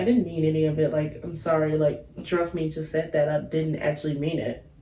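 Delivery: ordinary talk, nothing marked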